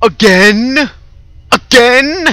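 very high, very loud, furious scream. Recording a game, the streamer reacts to it happening again, screaming angrily. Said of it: "I'm sorry for my screaming".

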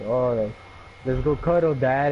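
ordinary talk

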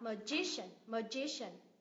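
slow magician, stress on the gi syllable. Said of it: "nhấn vào ngay âm tiết trước đó".

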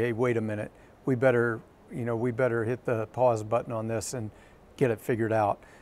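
normal talking voice

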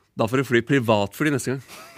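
usual speaking voice

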